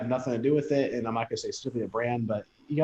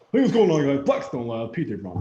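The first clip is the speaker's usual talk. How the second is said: loud, swooping douchebag persona voice; 2 semitones higher, 5 dB louder than usual. Mocking a rival's promotional greeting: imitating P J Braun. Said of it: "Look at P J Braun, that douchebag".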